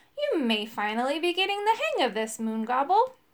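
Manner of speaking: ordinary delivery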